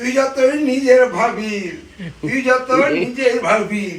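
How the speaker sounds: slow, put-on, sulky, grumbling pet voice.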